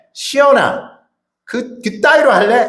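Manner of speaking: high, spiteful, nasty, hateful tone. Showing an ugly way of talking to someone named Sion: nasty, spiteful tone. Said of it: "이렇게 말투가 있잖아요. 아주 밉게 말하는 거예요".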